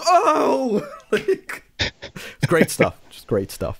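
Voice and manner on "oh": high, excited crowd going "oh". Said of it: "The whole crowd just goes".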